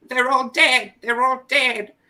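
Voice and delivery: shrill, high-pitched, loud, distressed wail, mocking. Retelling a murder case's emergency phone call, mocking the caller: mocking David Bain's distress. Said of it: "that's why I'm making fun of him".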